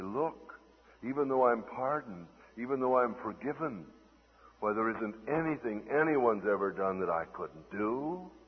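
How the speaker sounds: usual speaking voice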